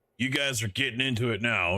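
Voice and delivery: ominous, menacing, threatening tone. Speaker retells an angry man addressing their group, imitating a menacing tone. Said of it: "you dug your own grave kind of tones".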